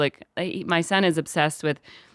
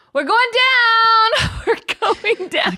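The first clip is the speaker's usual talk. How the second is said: mock very high, shrieking, panicked child's scream, drawn out; 6 dB louder than usual. Acting out what he screams on an airplane, retelling a scream. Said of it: "Just screaming".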